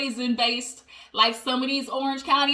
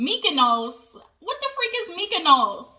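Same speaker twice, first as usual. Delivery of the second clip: put-on Jersey accent, pitched higher; 4 semitones higher than usual. Retelling a scene, the speaker quotes Gina: real Jersey accent. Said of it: "the real Jersey accent".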